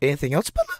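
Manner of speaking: voice cracking and breaking mid-phrase. Reading aloud to listeners, voice cracking. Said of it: "my voice literally cracked".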